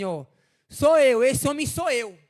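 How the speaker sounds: very loud, drawn-out shout. Retelling how a man stood up in church and shouted, retelling a shout. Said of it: "Ele levantou e gritou assim".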